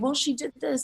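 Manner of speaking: hushed half whisper. Retelling what she half-whispered before an interview, acting out a half-whisper. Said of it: "I was kind of whispering like".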